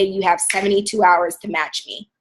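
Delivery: ordinary delivery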